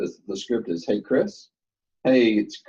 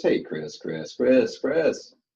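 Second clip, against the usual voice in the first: salesy, salesperson-style patter; 4 semitones higher than usual. Coaching another speaker on repeating a name: imitating a salesperson. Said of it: "You sound like a salesperson".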